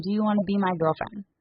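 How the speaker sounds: ordinary talk, nothing marked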